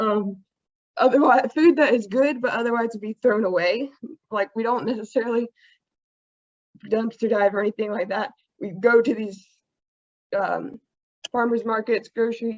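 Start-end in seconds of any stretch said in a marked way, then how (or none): 0.0-8.3 trembling, shaky, nervous voice, rushed. Presenting a food rescue group to an audience, nervous, shaking voice. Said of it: "I know my voice is shaking".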